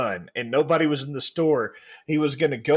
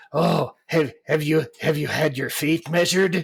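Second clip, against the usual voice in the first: put-on hunchback servant voice. Retelling how a man who fitted boots always talked, in an Igor voice. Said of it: "he always talked like this, like like he was Igor".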